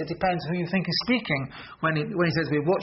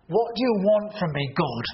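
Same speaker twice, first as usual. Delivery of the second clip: exasperated, fed-up, angry, frustrated outburst. Example of speaking to God when really upset, angry and frustrated. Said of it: "if you're really angry and frustrated".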